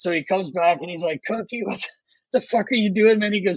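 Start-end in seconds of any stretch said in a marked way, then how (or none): 1.3-3.3 put-on coach voice, high, furious, losing control. Retelling a coach losing his mind at a player: imitating a furious coach. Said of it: "Keenan's losing his fucking mind".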